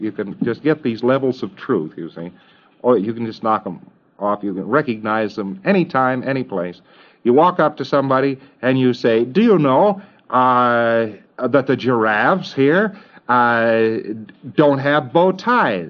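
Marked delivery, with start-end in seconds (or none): 9.2-15.9 deeply worried, very concerned, very slow voice. Showing how to walk up to somebody with an odd question, in a very concerned voice. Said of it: "in a very concerned voice".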